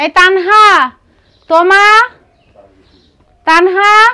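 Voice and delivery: high, loud calling out. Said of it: "এরকম চিল্লাচিল্লি করতেছো কেন?".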